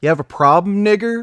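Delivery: mock very high, shrill, loud yell. Recounting an old man who yelled at him after almost hitting them: retelling a yell. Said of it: "yells at me".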